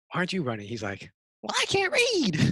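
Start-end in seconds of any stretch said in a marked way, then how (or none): 1.4-2.5 very high, shrill, put-on cartoon character voice. Retelling a cartoon scene, quoting the one character who stays: cartoon character voice. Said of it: "Why did you do the voice? That's what he sounds like".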